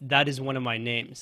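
ordinary talk

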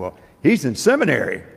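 mock-proud, imitated proud tone. Speaker retells their mother answering a friend about them, mock-proud mother. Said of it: "my mother proudly said".

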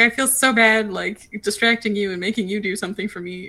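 put-on loud, near-tearful, apologetic pleading tone. Retelling asking a flight attendant for help: retelling an almost tearful plea. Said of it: "almost in tears, being like".

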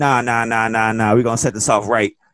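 put-on thick, broad, heavy New York accent. Retell the voice heard after Justin Roberts introduces the Challenger, in a heavy New York accent. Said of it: "you hear a heavy New York accent going".

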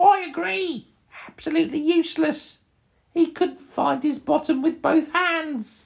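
very high, shrill, loud goblin voice. Game master voicing a goblin answering another goblin, in goblin voice. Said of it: "And they're talking in goblin talk".

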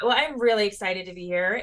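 plain

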